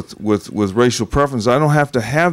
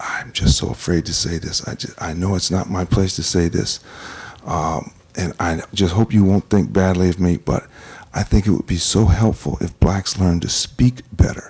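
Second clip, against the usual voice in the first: put-on whisper, lower; 5 semitones lower, 3 dB quieter than usual. Retelling what a woman said when she came up: imitating someone whispering. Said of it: "she was, like, whispering".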